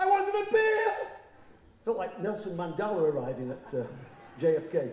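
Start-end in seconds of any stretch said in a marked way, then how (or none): 0.0-1.1 very high, loud, demanding shout. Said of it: "So I shouted".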